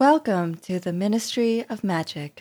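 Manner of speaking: chilly, icy, cool, frosty female voice. Asked to do her cool female voice, she says the line for comparison: cool, frosty female voice. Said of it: "do your cool female voice".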